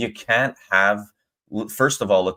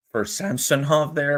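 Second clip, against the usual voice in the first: cracking, breaking voice going high; 6 semitones higher, 3 dB quieter than usual. Reacting to a play in a Leafs game, voice cracking. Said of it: "my voice just cracked".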